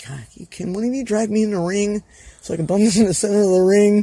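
high, almost begging, pleading tone. Recalling taking apron bumps for others: retelling almost begging. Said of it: "I was almost begging".

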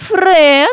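flirty high drawl. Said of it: "протянула девица кокетливо".

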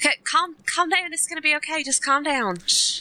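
put-on Southern accent, pitched a little up. Improv player voices Debbie Donna calming someone who dislikes needles, Debbie Donna southern accent. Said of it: "I'm doing a southern accent".

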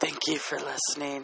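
soft, creepy, mellow late-night radio host voice. Imitating a late-night radio host signing off, creepy mellow Pillow Talk voice. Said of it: "this creepy mellow voice".

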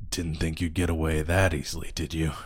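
low, throaty growling voice. Voicing a figure who lands and looks up at you, low growling voice. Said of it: "you hear a low kind of growling voice say".

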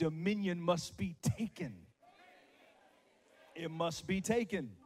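loud, sassy, attitude-filled delivery. Leading listeners to say a line back: said with an attitude. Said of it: "say it with an attitude".

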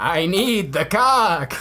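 goat creature voice crossed with a vampire. Amid crude banter with another speaker, in a vampiric goat voice. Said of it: "that sounds like a vampiric goat".

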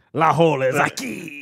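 sinister, slow, drawn-out delivery. Joking about a golf game: evil Resident Evil 4 Spanish. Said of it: "The evil Spanish they use in Resident Evil four".

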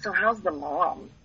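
hushed, conspiratorial, gossipy under-the-breath voice. Stepmom imitates people's first question about her family: imitating hushed, hand-over-mouth question. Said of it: "in a little bit of a hushed voice with their hand over their mouth".

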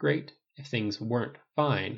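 ordinary delivery

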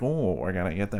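put-on rat-like voice. Retelling how Jeff Goldblum tried to act kind of ratty: Jeff Goldblum ratty voice. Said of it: "Jeff Goldblum did try to act kind of ratty".

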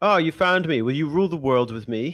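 put-on Old English accent. Acting out the Dragon Lord's prompt before the battle: Dragon Lord old English accent. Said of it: "it was funny to use that accent".

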